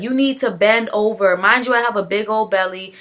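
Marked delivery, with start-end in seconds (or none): 0.0-1.4 called out in a put-on yell. Retelling the doctor yelling during an epidural: imitating someone yelling. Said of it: "yelling at me".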